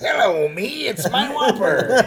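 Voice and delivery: very high-pitched pirate-style voice. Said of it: "I said it like a pirate".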